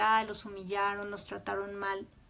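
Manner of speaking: normal talking voice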